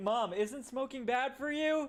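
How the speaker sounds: loud, high, rising blurt at full volume. Retelling a childhood question to mom: retelling a loud childhood question. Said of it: "I said it as loud as that".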